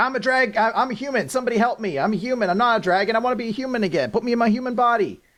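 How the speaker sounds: high-pitched, pleading mock scream. Retelling a story of a woman turned dragon flying about, imitating someone screaming. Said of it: "she's screaming like".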